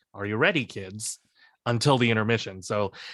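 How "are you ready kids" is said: normal talking voice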